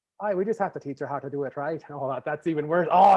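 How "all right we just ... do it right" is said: Newfoundland accent attempt drifting into Irish. Trying again at a Newfoundland accent, which comes out very Irish. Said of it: "That was very Irish".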